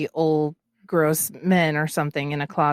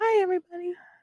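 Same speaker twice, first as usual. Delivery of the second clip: put-on very high, youthful, young-sounding little voice. Describing how she talks: imitating a young-sounding voice. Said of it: "she did sound young, like, she talks kinda like".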